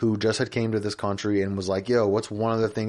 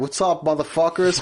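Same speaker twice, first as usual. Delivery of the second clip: put-on cocky bro voice, higher and louder; 8 semitones higher, 5 dB louder than usual. Acting out a made-up metaverse character greeting a crowd: imitating a cocky fuckboy. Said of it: "he's just fuck boy and he's yoked and he's like".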